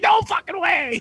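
mock very high, unhinged, losing-it freak-out. Retelling a scene where a character loses it: imitating someone losing it. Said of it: "he loses it".

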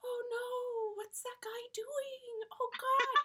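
very slow, hushed, soft, high voice. Imitating a comedian's double voice bit: Jim Gaffigan double voice. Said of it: "the double voice worked for Jim Gaffigan".

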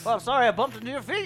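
gnome character voice. Voicing a gnome that fell at a player's feet: gnome voice. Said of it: "a gnome goes falling back and lands at your feet".

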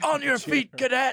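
shrill, very high, screamed drill sergeant bellow. Retelling being woken by the military school general: imitating a general screaming. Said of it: "he was just screaming at me".

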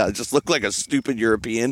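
ordinary delivery

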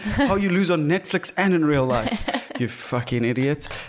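angry, exasperated, fed-up rant. Retelling a race loss seen on TV: retelling an angry shout. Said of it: "I still got so angry".

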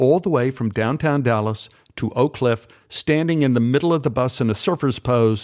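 plain reading voice

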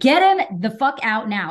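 put-on loud screaming voice. Retelling a frightening delivery, imitating own screaming. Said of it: "As I started screaming".

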